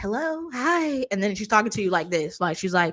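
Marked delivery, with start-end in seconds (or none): 0.0-1.0 put-on phone voice, pitched up. Imitating someone's phone voice, in a higher-pitched phone voice. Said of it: "her phone voice ... it's a couple pitches up".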